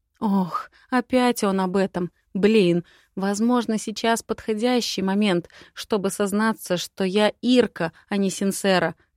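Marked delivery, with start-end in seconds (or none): none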